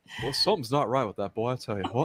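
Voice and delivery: very quiet, low, muttered cartoon dad voice. Taking turns doing cartoon voices with friends, a speaker does a Hank Hill impression. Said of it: "Oh, Hank Hill".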